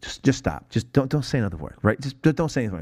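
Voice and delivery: pleading tone. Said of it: "he's, like, pleading with her".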